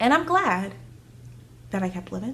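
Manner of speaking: choked up, voice breaking and catching. Speaker talking to people online, caught off guard: choked up. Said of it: "I wasn't expecting to get choked up just then".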